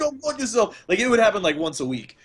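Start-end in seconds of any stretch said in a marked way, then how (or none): 0.0-0.8 high-pitched, loud yelling. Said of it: "just yell at random people".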